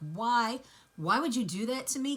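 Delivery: loud, breathless, sobbing tearful voice. Retelling her question after he let go: imitating someone crying. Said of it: "she's crying, and she's trying to catch her breath".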